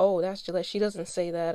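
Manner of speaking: ordinary talk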